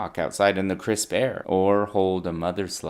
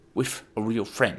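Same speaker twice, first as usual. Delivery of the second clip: slow, more sophisticated-sounding put-on posh accent. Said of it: "Slowly scale up the sophistication of your accents".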